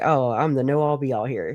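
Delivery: play-acted, self-important, puffed-up boastful tone. Retelling how Trisha acted at CrimeCon, imitating Trisha sounding self-important. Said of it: "she just felt important".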